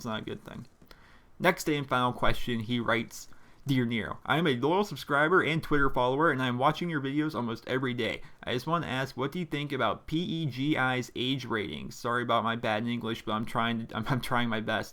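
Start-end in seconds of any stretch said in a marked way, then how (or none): none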